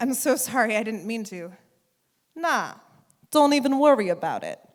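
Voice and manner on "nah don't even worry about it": put-on loud, swooping Brooklyn accent slipping out. Retelling a restroom run-in, voicing the banjo player's reply in a brooklyn accent. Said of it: "that's my Brooklyn accent".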